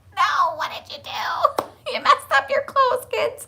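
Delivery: high, whispered, half-laughing dismay, gasped out. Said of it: "I was like".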